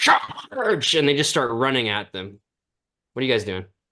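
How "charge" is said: shrill, high-pitched battle cry. Voicing a Minotaur warrior ordering an attack: Minotaur warrior battle cry. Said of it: "the Minotaur is immediately like".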